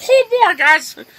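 very high little cartoon mouse voice. Retelling what was said to someone at work: Mickey Mouse voice. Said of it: "I had a really good Mickey Mouse voice".

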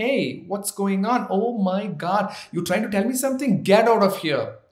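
put-on American accent. An indian speaker shows off his own fake american accent. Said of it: "I have a fake American accent, like".

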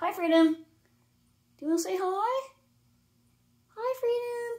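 very high-pitched, slow, drawn-out voice. Talking to a pet bird named freedom: high-pitched voice. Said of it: "He does enjoy a high-pitched voice".

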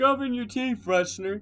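put-on, very high, very loud, shrill hillbilly accent. Bantering with friends during a game, in a hillbilly accent. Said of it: "you just sound like a hillbilly right there".

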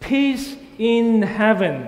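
loud proclaiming shout. Leading a congregation in repeating the crowd's cry: loud shouting voice. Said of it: "use your singing voice with me".

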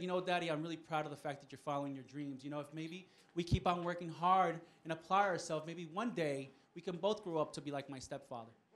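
ordinary delivery

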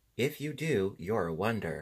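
ordinary delivery

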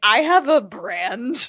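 very drawn out, loud, slow, breaking into laughter. Saying a sentence you can't say without laughing: laughing while talking. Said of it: "I can't say that sentence without laughing".

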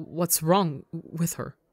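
frightened, scared, fearful stammering. Narrator reads a royal character's question, scared and stammering. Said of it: "the fear is leaking out into his voice as he stammers".

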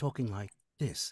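imitated soft, slow voice. Describing an audition demo to the host, imitating a soft, slow voice. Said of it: "in a very soft, slow voice".

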